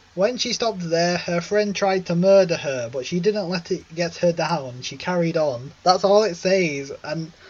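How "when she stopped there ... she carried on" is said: ordinary delivery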